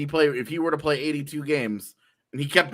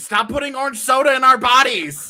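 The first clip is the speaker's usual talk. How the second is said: full-on screaming, very high, shrill and very loud; 10 semitones higher, 9 dB louder than usual. Picturing the NHL screaming back after dropping a stat: imitating someone screaming. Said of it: "the N H L is just screaming at me".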